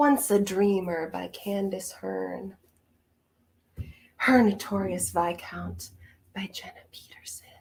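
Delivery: in a hushed whisper. Listing book titles aloud, whispering each one. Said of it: "I have to whisper all of them".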